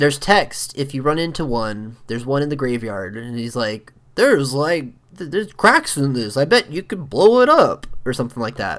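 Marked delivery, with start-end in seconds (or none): 4.1-7.9 hillbilly-style voice. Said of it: "Link's, like, hillbilly voice".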